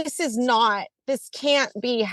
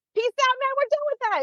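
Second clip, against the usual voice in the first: put-on full-on yell, high pitched; 14 semitones higher than usual. Describing how direct primary care doctors react: yelling. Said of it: "I just yelled in people's ears".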